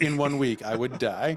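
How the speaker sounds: ordinary talk, nothing marked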